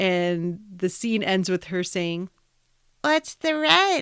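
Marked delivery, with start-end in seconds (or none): 3.0-4.0 put-on high, childlike, babyish voice. Recapping a scene, imitating a waitress at Monk's in a baby voice. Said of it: "she's got this baby voice, ... That was my impression of her".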